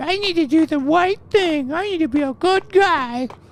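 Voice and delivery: high, squeaky, exaggerated mocking voice.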